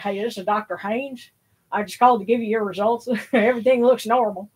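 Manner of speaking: rural Southern US country manner of speech. Retelling the doctor's call with test results, the speaker does Doctor Haynes' redneck voice. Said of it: "he had kind of a redneck voice".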